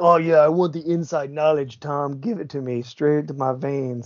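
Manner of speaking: generic sports bro voice. Describing bros at home wanting inside knowledge, the speaker does a general bro man impression. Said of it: "Are you imitating me or Dan?".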